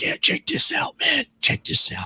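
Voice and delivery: hushed, soft, breathy whisper. Retelling someone whispering during the commentary: imitating someone whispering. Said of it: "he's whispering over me".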